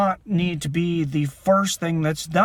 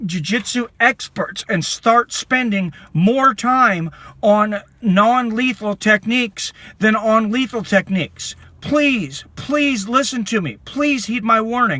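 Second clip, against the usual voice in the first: slow, upset, impassioned screaming; 4 semitones higher, 4 dB louder than usual. Deeply impassioned speaker pleading with listeners, screaming. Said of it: "I know I'm screaming".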